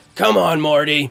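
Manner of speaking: rough, scratchy, raspy cartoon voice. Showing a listener what a cartoon character sounds like, raspy Rick voice. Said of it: "Rick has a, a raspy voice".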